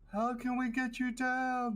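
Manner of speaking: very high, drawn-out, held-back half-yell. Calling up to a trapped figure in a tower without waking serpents: yelling very softly. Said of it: "I'm trying to yell, but very softly".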